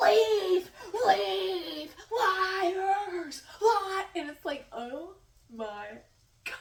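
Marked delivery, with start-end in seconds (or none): 0.0-4.0 high, very slow, stretched-out yelling. Retelling how a woman at a concert yelled at them: imitating her yelling. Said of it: "she's yelling all this".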